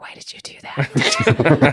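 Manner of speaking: slow, whispered scolding tone.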